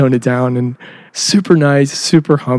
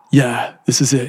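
slow, drawn-out, zen-like drawl. Retelling playing Keanu at a theme park: Zen Keanu Reeves voice. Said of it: "Zen Keanu-ness".

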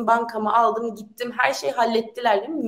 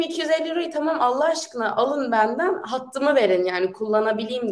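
usual speaking voice

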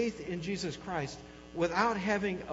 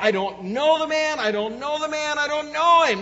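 high, loud emphatic delivery. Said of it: "Peter would say emphatically".

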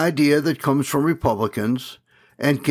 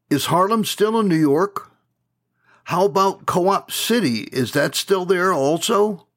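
mock sarcastic, needling, pitched-up delivery; 5 semitones higher than usual. Retelling how a longtime friend in the South asked something, mock-sarcastic question. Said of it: "he asked me sarcastically".

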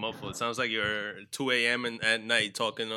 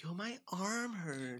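very quiet, feeble-sounding, unmanly griping voice; 8 semitones higher, 11 dB quieter than usual. Retelling a friend's complaint on the way here: imitating a friend, less manly. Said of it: "I said it a little more manly".

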